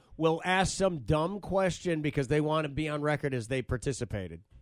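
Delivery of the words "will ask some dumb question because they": usual speaking voice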